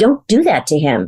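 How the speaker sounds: big, deep, commanding grown-up super voice. Retelling what the grown-up speaker said to them: retelling in a big super voice. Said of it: "with my big super voice now going".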